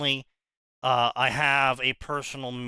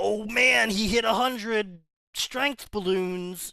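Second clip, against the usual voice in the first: sarcastic fake excitement and enthusiasm, pitched up; 9 semitones higher than usual. Mocking fans of stat numbers in fanfic: mock excitement. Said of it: "I don't get excited when".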